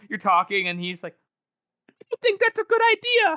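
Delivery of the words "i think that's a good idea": very high, loud peeping voice. Retelling how a character sounds in the audiobook: high-peeping Gorst voice. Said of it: "he said in that high-peeping voice".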